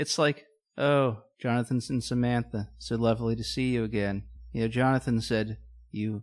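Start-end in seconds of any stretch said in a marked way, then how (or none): 0.8-4.2 put-on flat, unimpressed deadpan monotone. Illustrating someone's insulting way of greeting a couple: mock unimpressed monotone. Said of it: "It's very monotone".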